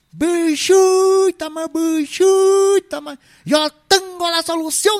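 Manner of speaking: very high, long-stretched, drawn-out Paisa shout. Retelling what a paisa used to shout, imitating a shouting paisa. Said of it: "gritaba el paisa".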